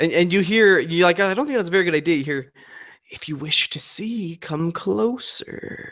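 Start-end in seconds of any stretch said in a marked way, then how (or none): 3.1-5.9 very slow, drawn-out whisper. Voicing a plant that whispers back to a character: whispering plant voice. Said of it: "the plant whispers back".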